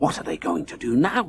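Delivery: quiet, hushed voice. Someone in the crowd asks as the motorbike revs, in a hushed voice. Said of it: "asked a hushed voice".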